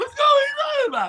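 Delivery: put-on very high, loud, drunken shout.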